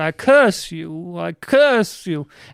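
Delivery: very slow, drawn-out witch voice. Retelling what Baba Bobear said at the door: Baba Bobear voice. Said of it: "she is a small little babushka witch".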